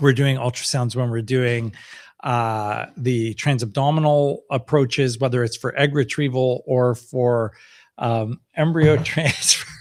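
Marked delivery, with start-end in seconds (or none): 8.0-9.6 slow, giggling delivery, laughing mid-sentence. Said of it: "I'm laughing at Tarek 'cause he's lost it".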